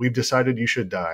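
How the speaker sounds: put-on very calm, even voice. Retelling a drugged husband's words to his wife: imitating a very calm threat. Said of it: "looked her in the eye very calmly".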